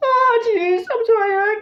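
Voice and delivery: very high, very loud, drawn-out whiny wail. Demonstrating character voices, Morty apologizes: whiny Morty voice. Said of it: "sounds like he's just a whiny little baby".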